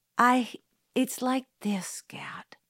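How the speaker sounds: slow muttered voice. Jim answers Scout after she pleads with him; muttered. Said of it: "he muttered".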